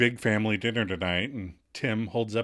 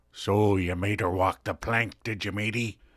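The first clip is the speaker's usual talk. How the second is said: stock seafaring pirate voice; 3 semitones lower than usual. Retelling a tv scene where a character talks like a pirate: pirate voice. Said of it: "in a pirate's voice".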